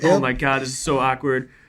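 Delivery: mock giggly delivery with giggling. Retelling whispering to a buddy during a nude drawing class: imitating own giggling. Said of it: "just giggling".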